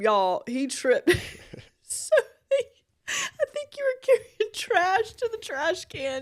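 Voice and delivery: high voice cracking, swooping laugh-crying. Telling another speaker about his fall over the cords: crying with laughter. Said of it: "messing up my makeup".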